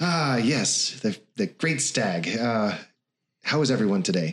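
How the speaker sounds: big, cheery, hearty, jovial voice. Voicing the mayor greeting the players from behind: hearty voice. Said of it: "a hearty voice say".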